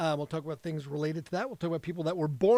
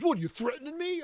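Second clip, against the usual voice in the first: put-on very high, affronted, angry tone; 10 semitones higher than usual. Retelling how another driver reacted after being called out: imitating an angry driver. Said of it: "the guy got so angry".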